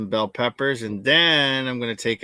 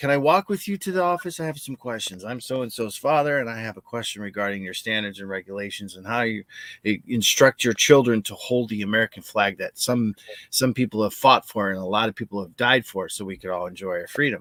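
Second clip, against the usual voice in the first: courteous, diplomatic, polite, restrained tone. Retelling how he approached the principal: imitating his own polite tone. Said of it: "I'm trying to be polite and political".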